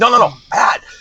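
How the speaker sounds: urgent voice.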